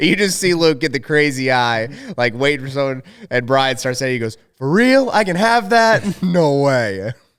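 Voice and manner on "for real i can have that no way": slowed-down, high-pitched, drawn-out way of talking. Retelling how Brian copies a friend at meals: imitating a friend. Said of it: "That's a really good impression".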